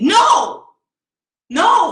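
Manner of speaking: mock very high, loud tearful crying. Retelling refusing their mother's plea to get back in the car, acting out crying. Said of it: "And I'm crying and I say".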